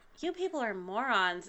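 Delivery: soft, said on a sigh. Game narrator voices the bodega cat answering the players, sighing. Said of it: "kind of sighs, goes".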